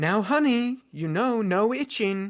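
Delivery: shrill, loud scolding voice, like a nagging mother. A narrator voices a thing scolding Madrasa, in a shrill scolding motherly voice. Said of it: "a shrill motherly voice comes out of it as it kind of scoldingly looks at her".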